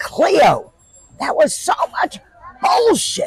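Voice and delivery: put-on scolding yell. Recalling a voice shouting when reaching for morning cigarettes: retelling a shout. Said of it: "a voice shouted".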